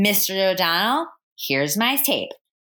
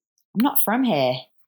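imitated Australian accent; 2 semitones higher than usual. Retelling what an Australian guy said, in an Australian accent impression. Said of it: "where is he from in that impression?".

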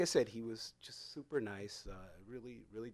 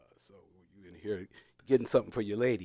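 loud, friendly, deep bass voice; 7 dB louder than usual. Retelling a chat with the nicest guy next to you, imitating his bass voice. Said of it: "he's talking with that bass voice".

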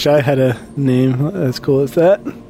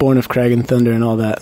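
normal talking voice

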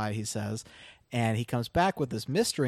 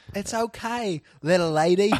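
clumsy, poorly faked English accent, raised; 8 semitones higher, 5 dB louder than usual. Trying out accents with another speaker, in a bad fake accent. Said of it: "That was really bad".

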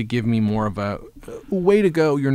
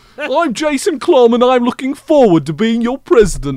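put-on very high and loud with an English accent; 12 semitones higher, 7 dB louder than usual. Imagining John Oliver playing him in a movie: John Oliver impression. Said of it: "him keeping the English accent".

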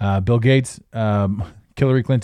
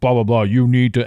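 put-on stern, booming police voice. Complaining about how police officers talk, imitating a cop: imitating a stern cop voice. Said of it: "talks to you in this stern voice".

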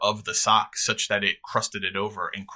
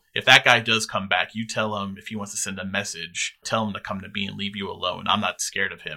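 usual speaking voice

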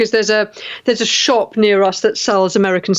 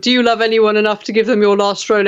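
usual speaking voice

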